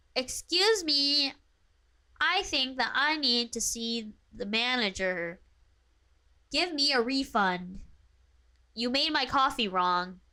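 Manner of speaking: entitled, complaining voice. Answering a viewer's request to yell with a Karen impression: performing a requested Karen impression. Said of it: "yell at us with your best Karen impression".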